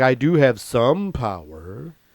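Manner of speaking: very slow, creepy drawl, words dragged out. Retelling what Tom Hanks said at an award interview: creepy Tom Hanks impression. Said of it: "did he say it like that, all creepy?".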